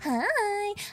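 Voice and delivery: very high, squeaky, tiny, cute cartoon voice. Showing a voice picked up from playing Super Smash Brothers, Kirby voice on 'hi'. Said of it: "That's my Kirby high".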